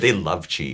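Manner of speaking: ordinary talk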